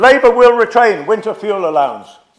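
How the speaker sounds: big, loud capital-letter shout. A councillor quoting another councillor's pledge printed in capital letters, mock-shouting it. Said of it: "I'm shouting because it says it in big letters".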